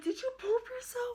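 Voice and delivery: very high, shocked and disgusted tone.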